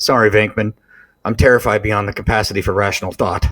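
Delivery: flat monotone character voice. Retelling a film scene where Egon answers Venkman, in Egon's deadpan monotone. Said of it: "And he says it just so monotone".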